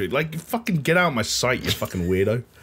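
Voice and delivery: ordinary talk, nothing marked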